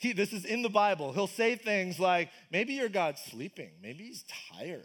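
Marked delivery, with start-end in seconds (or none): 2.5-4.8 scornful, mocking, teasing taunt. Retelling a prophet making fun of false gods' followers: imitating mocking taunt. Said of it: "Elijah starts making fun of them".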